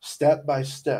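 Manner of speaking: ordinary delivery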